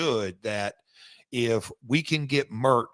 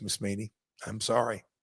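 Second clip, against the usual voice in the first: ordinary delivery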